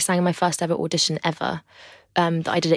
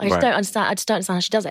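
ordinary talk

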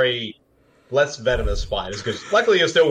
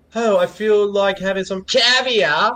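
accent sliding between British and Australian; 8 semitones higher than usual. Showing how a voice sounds, the speaker does an accent drifting between british and australian. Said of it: "back and forth between being British and Australian".

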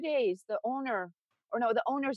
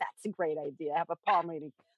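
low, facetious, insincere put-on sarcasm; 5 semitones lower than usual. Retelling her answer to a woman pushing a palm reading, retelling a facetious reply. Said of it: "I was so facetious".

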